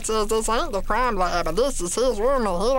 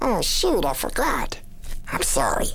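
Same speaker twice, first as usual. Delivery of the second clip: gentle, sweet small voice; 5 semitones lower than usual. Quoting a favourite cartoon moment, imitating Meatwad's soft, sweet voice. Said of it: "it's so quiet with it and it's so sweet".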